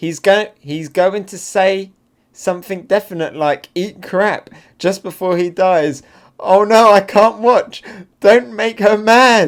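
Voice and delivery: high, loud, swooning, gushing fangirl voices.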